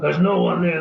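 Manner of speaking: brisk, dismissive, brushing-off shout. Recalling a woman shouting into his darkened childhood bedroom: retelling a shout. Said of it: "she would shout".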